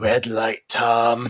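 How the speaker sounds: low chain-smoking sixties film actress voice. Imitating a girl's line from a film: chain-smoking sixties actress voice. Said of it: "dub the girl's voice with, like, a, a, a chain-smoking sixties actress".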